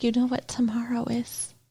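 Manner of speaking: put-on sad voice. Retelling a show scene where Claire shows up, imitating Claire all sad. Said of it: "she's, like, all sad".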